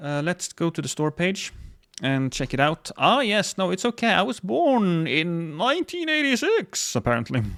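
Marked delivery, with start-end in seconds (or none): 5.6-6.9 very high-pitched put-on old man voice. Reading a birth year off a game store page, old man voice. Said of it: "I made an old man voice out of nineteen eighty-six".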